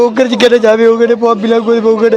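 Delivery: ordinary delivery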